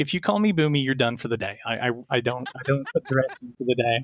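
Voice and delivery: normal talking voice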